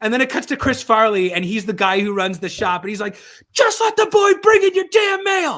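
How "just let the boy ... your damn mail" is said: very high, loud scream. Retell the sketch where the guy who runs the shop addresses the audience, imitating Chris Farley screaming. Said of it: "he's just he's screaming at the audience".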